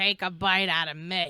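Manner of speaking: mock-rude attitude. Friends imagining how a messy woman would sound, in a mock-rude attitude. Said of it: "That's what she would sound like".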